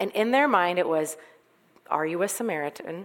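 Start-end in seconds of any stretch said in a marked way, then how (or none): 1.9-3.0 mock snide, needling, passive-aggressive tone. Retelling the accusers' insult to Jesus: imitating a passive-aggressive tone. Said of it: "they say it really passive-aggressively".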